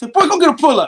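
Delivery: loud, shrill scolding voice.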